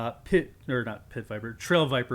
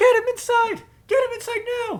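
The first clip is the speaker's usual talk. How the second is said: put-on very high, loud child's scream; 6 dB louder than usual. Voicing a child who screams an order to drag a man inside: child screaming. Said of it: "you hear the child scream".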